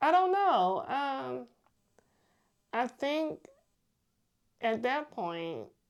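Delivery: teary high voice, close to crying. Asked what the Dreams Foundation could look like in years, answering tearful. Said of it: "Don't cry".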